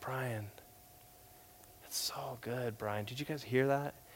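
very soft, hushed, quiet speaking voice. Retelling how a professor praised an answer at lunch: soft voice imitating Chris Wright. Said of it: "he had this soft voice".

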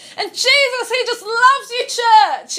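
very loud, booming, high-pitched preacher delivery. Explaining volume in delivery, the speaker demonstrates a sermon line; loud preaching voice. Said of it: "volume is whether you're like".

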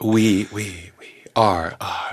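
live echo effect, each word doubled back. Answering a request for an echo on the voice: live echo effect. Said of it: "or I could do it just live".

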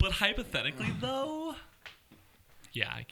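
high, swooping put-on California girl accent. Repeating another speaker's line back to them, imitating a California girl accent. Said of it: "with a California girl accent".

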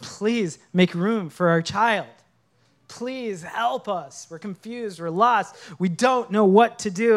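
urgent, imploring, begging plea. Recalling Amrita on the phone asking them to make room, imitating someone begging. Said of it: "I remember her on the phone just begging".

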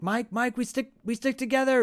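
very high, shrill scream. Retelling how one man screams at another: retell it as a scream at someone. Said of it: "Gordon like screams at him like".

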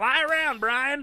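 fake yelling.

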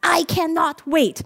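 put-on sweet, cute little toddler baby-talk voice. Retelling what a toddler says, imitating a cute baby accent. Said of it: "says it really cutely with this baby accent".

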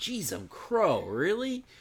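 high, completely floored, blown-away surprised exclamation. Demonstrating the best moment to use the expression; completely surprised. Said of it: "Like you are blown away by something".

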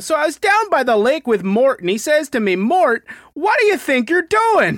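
put-on thick, loud, very high Midwestern accent. Describing a game's dwarf construction workers, the speaker imitates their talk: thick Midwestern accent. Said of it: "they all have very thick Midwestern accents".

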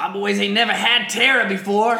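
booming, loud, belted, high-pitched space-pirate voice. Telling a story about an actor on a shoot, the speaker does a Yondu impression. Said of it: "That's my Yondu impression".

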